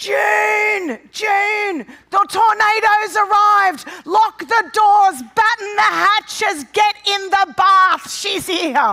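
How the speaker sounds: very high, very loud, shrill, drawn-out scream. Retelling how Dad reacts to an arrival: imitating Dad screaming. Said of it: "Dad starts screaming".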